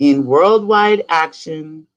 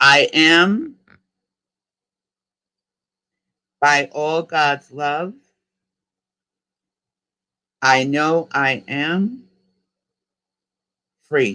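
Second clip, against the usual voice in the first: speaking a little more slowly. Leading listeners in a repeat-after-me affirmation, speaking a little slower. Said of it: "I'm going to go a little bit slower".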